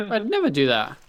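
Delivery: voice breaking and cracking as it goes. Answering an accusation from another player: voice cracking. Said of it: "Your voice cracked".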